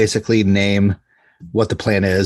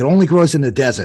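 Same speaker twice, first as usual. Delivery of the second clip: put-on broad, heavy New Jersey–New York accent; 7 semitones higher than usual. Describing a plant expert they watched, imitating his thick New York accent. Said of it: "His accent is the thickest".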